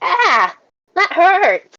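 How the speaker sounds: acted high, swooping pained yelp. Voicing a character bitten by swarming rats: in-character pained shout. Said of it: "and then he kinda shouts".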